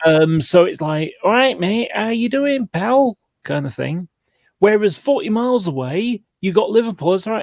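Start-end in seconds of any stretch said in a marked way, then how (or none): 1.2-3.2 Manchester scally accent, pitched up. Explaining the accents around manchester, demonstrating the manchester scally accent. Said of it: "the sort of scally".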